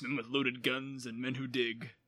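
badly done, gravelly gunslinger impression. Describing a character's voice, a speaker attempts a terrible Clint Eastwood impression. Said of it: "a terrible Clint Eastwood impression".

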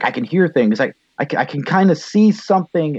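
high, rising, panicked voice, freaking out.

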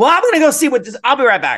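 very high, sing-song, swooping holler. Retelling a worker walking off mid-order: imitating a worker yelling. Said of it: "she's yelling".

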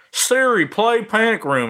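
slow, high-pitched Southern drawl. Retelling asking Siri to play a movie: Jodie Foster Southern accent. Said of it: "in my Jo-, Jodie Foster Southern accent".

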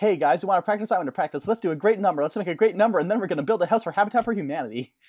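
over-the-top, extremely fast rush of words. Imitating Finn on pills at practice: imitating Finn talking extremely fast. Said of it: "Talking extremely fast".

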